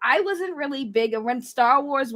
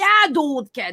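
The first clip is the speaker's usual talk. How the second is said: put-on South Boston local accent; 3 semitones higher, 4 dB louder than usual. Explaining how people talk out here, imitating them in a South Boston accent. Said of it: "that's how they talk out here".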